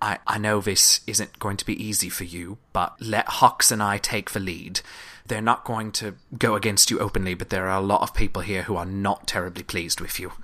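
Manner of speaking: confidential, half-whispered stage whisper aside. Voicing Dranx warning the group quietly while leading them: half-whispering. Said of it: "He sort of whispers that to you all".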